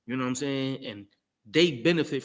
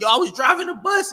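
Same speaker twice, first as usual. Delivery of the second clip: put-on very loud, high, shrill baby hollering; 13 semitones higher, 10 dB louder than usual. Acting out a newborn telling people about a bus crash: mock yelling as a baby. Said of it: "and you just yelling".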